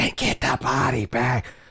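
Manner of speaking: hushed, theatrical, near stage whisper. Retelling how someone on the show called for a body bag: imitating a stage whisper. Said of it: "almost a stage whisper".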